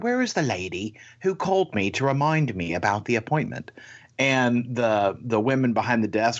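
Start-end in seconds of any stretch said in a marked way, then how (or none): 0.0-3.7 put-on British accent. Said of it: "this woman with a British accent goes".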